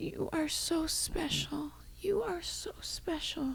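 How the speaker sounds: put-on weak, high, slow, frail old woman's whisper.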